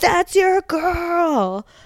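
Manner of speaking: yelling, high pitch, drawn out.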